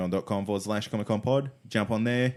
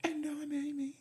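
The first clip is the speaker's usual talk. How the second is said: put-on mimicking voice pushed up very high; 10 dB quieter than usual. Trying a better impression after mocking another's attempt, imitating Amy. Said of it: "let me try".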